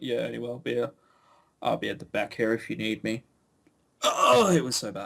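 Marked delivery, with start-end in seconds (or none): 0.0-3.2 put-on stoned voice, lower and quieter. Teasing how someone speaks, imitating a person who just sparked up a joint. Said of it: "sparked up a joint in a cafe and gone".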